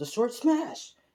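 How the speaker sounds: high, screamed shout.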